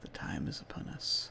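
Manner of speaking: hushed, soft, breathy, barely voiced whisper. Voicing a whisper heard while walking alongside him: whisper. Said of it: "you sort of hear this sort of whisper".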